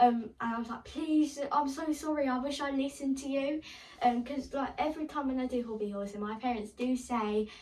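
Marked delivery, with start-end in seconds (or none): 0.8-3.6 mock desperate pleading, high and panicked. Retelling panicking to mum about an injured foot: retelling panicked pleading.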